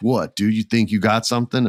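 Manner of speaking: plain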